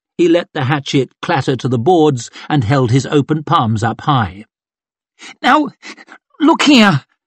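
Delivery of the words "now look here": halting stammer, very high voice, pleading tone. Reading a man who drops his hatchet and raises his hands, stammering. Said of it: "he stammered out".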